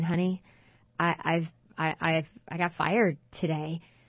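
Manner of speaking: mock crestfallen, dejected, stumbling, faltering voice. Acting out a heartbroken husband telling his wife about being fired: imitating a heartbroken husband. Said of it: "your husband dragging in and going".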